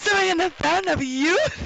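mock-shocked. Quoting how he said a favourite line, acting it out mock-shocked. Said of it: "like, so, like, shocked".

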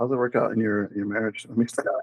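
hushed, barely audible half-whisper. Asking another speaker how it works out in their marriage: half-whispering. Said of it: "why were you whispering?".

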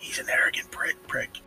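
whispered aside. During a role-play game, a player's character remarks about Balsack: whispering. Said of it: "I'm gonna whisper".

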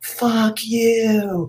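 put-on very high scream, last word drawn out. Retelling running naked by the river: retelling a scream at top of lungs. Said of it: "I screamed at the top of my lungs".

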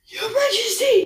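put-on very high, loud, wheezing voice. Falling to his knees before the king, the shepherd addresses him, wheezing. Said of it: "he wheezed".

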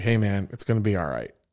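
mock easy, confident, soft, calm, reassuring tone. Retelling what Z said when pulled over: imitating Z's calm, confident voice. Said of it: "Z was so calm".

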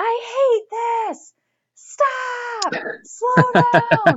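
very high, very slow, drawn-out shrieking scream. Retelling what they screamed while pulled fast on a tube: retelling own screaming. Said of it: "I literally was screaming".

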